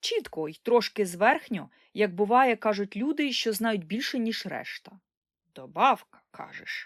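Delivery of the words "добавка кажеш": muttering, much lower pitch. An old man repeats a girl's word while reaching into a bundle: muttering. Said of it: "бурмотів дід".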